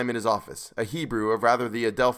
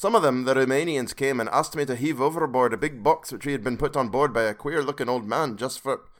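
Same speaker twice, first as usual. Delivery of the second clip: bad, failed, fake Scottish accent; 2 semitones higher than usual. Reading a passage aloud for listeners, in a self-admitted bad scottish accent. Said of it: "I can't do a Scottish accent".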